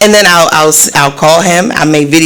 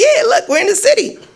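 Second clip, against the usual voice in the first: very high-pitched mocking voice. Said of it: "And he was like".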